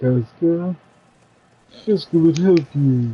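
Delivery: put-on huge cat creature voice. Showing another player how the game character talks: Casca voice. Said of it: "She talks like this".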